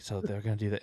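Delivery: hushed, voiced stage whisper. Retelling how one character half-whispers in another's ear: imitating someone half-whispering. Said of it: "Jessica's whispering in her ear".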